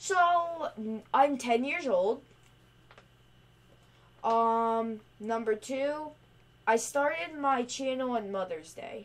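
drawn out very slowly and deliberately, word by word. Ten-year-old channel host repeating answers for viewers, saying it even slower. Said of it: "Now I'll say it even slower".

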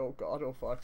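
normal talking voice

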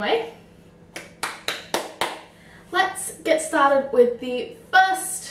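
slow, stretched-out drawn-out delivery.

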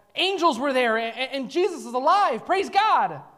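high, awestruck voice full of wonder and amazement. Showing how the disciples were not saying it, in a tone of amazement. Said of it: "in a tone of amazement that this is truth".

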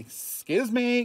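put-on high, cheeky, insolent kid voice. Doing a character bit, in an insolent kid voice. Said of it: "like, insolent kid. He's like".

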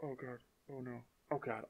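very soft, small, hushed, frightened voice. Reacting to a prank bucket of acid in a video game: scared. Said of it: "I'm so scared".

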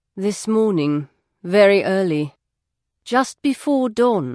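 plain

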